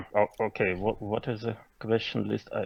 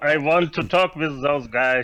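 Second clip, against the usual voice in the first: yelling in put-on king voice, higher, louder; 5 semitones higher, 5 dB louder than usual. Playing the wounded king, ordering his men: shouting orders as the king. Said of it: "just shouting to his men".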